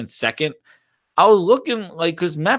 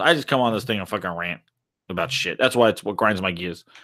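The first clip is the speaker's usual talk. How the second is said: normal talking voice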